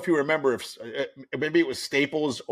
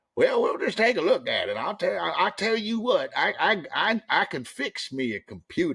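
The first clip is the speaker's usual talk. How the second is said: put-on thick down-home Appalachian accent, pitched up; 6 semitones higher than usual. Speaker quoting a woman he explained a computer problem to; imitating thick appalachian accent. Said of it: "had the thickest Appalachian accent I have ever heard".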